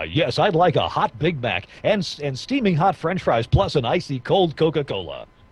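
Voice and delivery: commercial-style radio announcer voice. Demonstrating how to order fast food using adjectives, radio voice. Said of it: "order in a radio voice".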